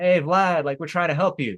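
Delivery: high-pitched, calling-out yell. Retelling what a search party called out: imitating someone yelling. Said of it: "a search party, like, yelling".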